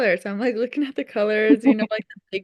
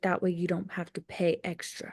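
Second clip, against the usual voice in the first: whispered, much quieter, lower; 4 semitones lower, 9 dB quieter than usual. Retelling what another woman said to her, in a retold whisper. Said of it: "why are you whispering?".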